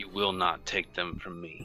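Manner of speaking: quiet, soft, firm, resolute voice. Speaking in character, refusing to let an invading presence take them: quiet but firm. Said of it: "he just quietly but firmly says".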